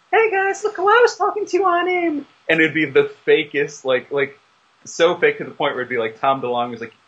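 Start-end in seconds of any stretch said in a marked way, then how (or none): 0.1-2.2 very high-pitched chatter, voice pushed way up. Retelling how Clay showed off fake AIM chats: imitating Clay's high-pitched voice. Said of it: "he talks in this real high-pitched voice".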